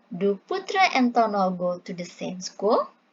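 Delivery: pitch rising sharply on "school". Intonation lesson, question without a wh-word: rising pitch on school. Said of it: "kita intonasinya itu naik. Kayak gini".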